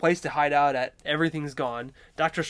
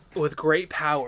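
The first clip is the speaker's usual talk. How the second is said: ordinary delivery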